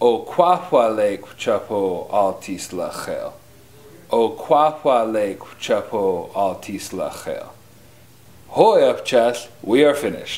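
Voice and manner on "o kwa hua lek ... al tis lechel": downward inflection, ending low on lechel. Teaching the correct way to say a phrase, with a downward inflection. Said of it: "You want to say it with a downward inflection".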